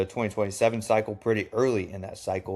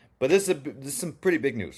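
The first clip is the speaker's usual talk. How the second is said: stuttering, tripping over words, much higher pitch; 4 semitones higher than usual. Announcing big news to Penn State fans in a video, stuttering. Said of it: "Big enough to where I'm stuttering".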